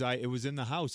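ordinary talk

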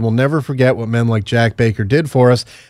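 normal talking voice

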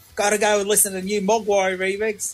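terrible fake Australian accent. Repaying a favor to a guy who mentioned them: imitating Toadfish, terrible Australian accent. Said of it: "do a terrible Australian accent".

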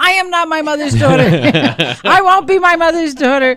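high, loud, hysterical voice.

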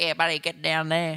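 put-on Australian accent. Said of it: "you hear the accent".

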